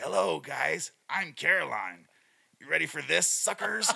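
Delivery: loud, slow, rough, creaky creepy gremlin voice. Retelling how someone voiced a little doll character, creepy gremlin voice. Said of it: "she went creepy gremlin with it".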